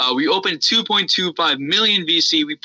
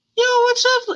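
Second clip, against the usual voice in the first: put-on high-pitched teenager voice, much higher. Recalling a gameplay recording made at 13, high-pitched teen voice. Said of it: "high pitched".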